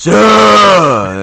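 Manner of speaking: weird, drawn-out yell. Retelling a movie scene, imitating a deep weird yell: Jeff Goldblum's deep weird yell. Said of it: "Goldblum's yell".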